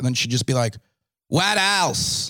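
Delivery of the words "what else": loud, grating, shrill voice. Retelling a heckler who kept interrupting a show, imitating Leah's loud grating voice. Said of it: "applause breaks and just this loud".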